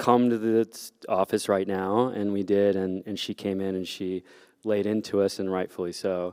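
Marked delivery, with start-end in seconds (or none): none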